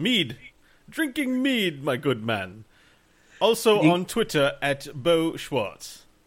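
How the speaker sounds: put-on clumsy, unconvincing German accent, spoken slowly. Playing Friar Tuck and saying where people can find him: bad German accent. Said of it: "he's doing a German accent".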